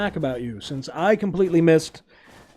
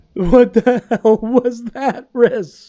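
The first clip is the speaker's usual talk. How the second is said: loud, high laughing disbelief. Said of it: "I'm still laughing about that".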